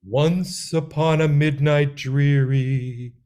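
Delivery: eerie, spooky, dreary, drawn-out voice. Leading a listener through a spooky-voice exercise, reading aloud in a spooky voice. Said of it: "try to make my voice as spooky as possible".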